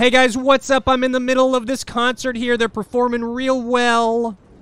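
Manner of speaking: very high, loud yelling vlogger voice. Pretending to vlog from a concert, yelling like a vlogger. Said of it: "And now I'm yelling about it".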